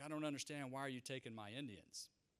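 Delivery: put-on angry man's voice. Retelling what a man said while mad: imitating Mister Miller being mad. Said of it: "he comes to me and he's mad".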